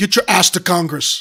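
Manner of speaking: put-on Austrian accent. Imagining him ordering someone to Congress: Arnold Schwarzenegger accent. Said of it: "if Arnold Schwarzenegger were here".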